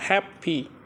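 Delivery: strong stress on first syllable hap in happy. Pronunciation lesson on strong and weak syllables: stress on hap in happy. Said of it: "we say hap very strong".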